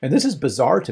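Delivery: normal talking voice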